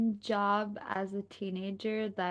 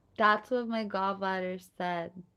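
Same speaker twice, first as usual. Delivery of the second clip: ordinary talk, nothing marked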